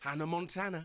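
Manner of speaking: ordinary delivery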